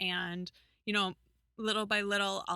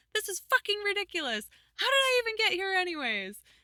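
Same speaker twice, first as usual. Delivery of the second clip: acted scream, higher and louder; 13 semitones higher, 5 dB louder than usual.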